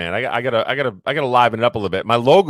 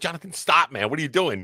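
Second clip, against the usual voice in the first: mock angry scolding, higher and quieter; 4 semitones higher, 7 dB quieter than usual. Imitating a wife scolding her husband next to her on the couch: imitating a mad wife. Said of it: "And then she gets all mad at you".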